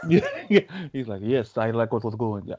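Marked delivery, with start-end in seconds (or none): 1.2-2.4 mock Russian accent, poorly done. Previewing a fight card, the speaker voices Vladimir Putin's reaction, bad Vladimir Putin impression. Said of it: "It's not a great Russian impression".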